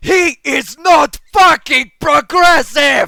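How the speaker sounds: furious, shrill, very loud shriek at full volume. Narrator reading a first-person story, retorting to Hermione: shrieking. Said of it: "I shrieked".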